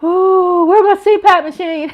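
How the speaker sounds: out of breath from laughing. Reading chat comments aloud after laughing hard, out of breath from laughing. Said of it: "I'm just running out of breath in my lungs".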